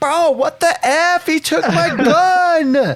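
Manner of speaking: put-on shrill, very high child scream, gun drawn out. Retelling a kid's outburst at the esports room: imitating a kid screaming. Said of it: "He's, like, screaming".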